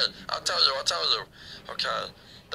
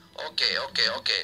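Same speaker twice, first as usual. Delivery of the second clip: ordinary delivery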